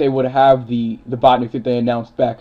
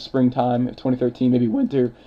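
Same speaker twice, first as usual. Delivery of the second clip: voice cracking and breaking; 3 dB quieter than usual. An eighteen-year-old speaker talking on, voice cracking. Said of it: "voice crack".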